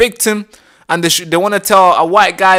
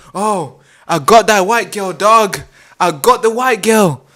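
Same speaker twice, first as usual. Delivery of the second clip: mock thrilled, worked-up, hyped-up excited tone. Recounting what the perpetrator was saying, imitating an excited tone. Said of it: "in an exciting type of tone".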